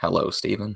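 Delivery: put-on deep narrator voice. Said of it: "in a Morgan Freeman voice".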